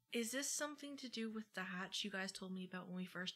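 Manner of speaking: hushed, soft half-whispered aside. Leaning over to Integrity in the game to half-whisper a question: half-whispering to Integrity. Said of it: "whisper to her".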